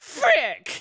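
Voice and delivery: high nerd voice.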